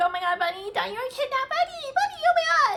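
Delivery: freaking out, frantic, high-pitched squeal.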